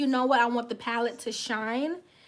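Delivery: ordinary talk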